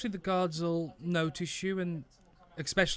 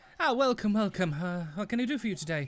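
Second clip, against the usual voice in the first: put-on courteous, welcoming voice of a young elf; 3 semitones higher than usual. Narrator voices a young elf as the listeners enter Gesundmeyer's; young elven gentleman voice. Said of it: "a young elven gentleman and goes".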